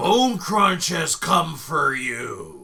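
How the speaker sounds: loud, slow, swooping, vicious orc brute voice. Describing a voice the listeners hear in the scene, speak in a mean orc voice. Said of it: "it sounds like a really mean orc".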